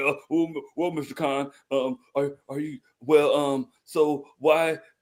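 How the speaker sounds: slow, put-on nervous, tongue-tied stammer. Mimicking how someone would fumble their words when confronting a powerful figure, stammering in a put-on tongue-tied manner. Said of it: "they'll get tongue tied".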